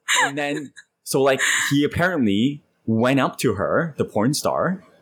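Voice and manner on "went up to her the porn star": ordinary talk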